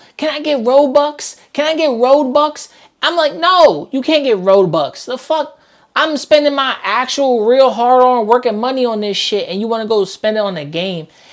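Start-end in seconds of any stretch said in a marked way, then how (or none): 0.2-2.7 put-on desperate, pleading child's begging voice. Complaining about kids asking parents for Robux, imitating kids begging. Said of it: "be begging like it's crack".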